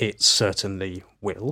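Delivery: ordinary delivery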